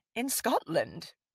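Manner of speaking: ordinary delivery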